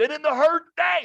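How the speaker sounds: shrill, loud yell. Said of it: "He's yelling at him".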